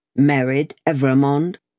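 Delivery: ordinary delivery, nothing marked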